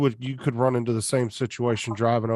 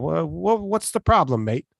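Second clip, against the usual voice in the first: laid-on put-on Australian accent with raised pitch; 6 semitones higher than usual. Imagining being pulled over by a cop while still on an australian license: australian accent. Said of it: "you just start talking with an Australian accent".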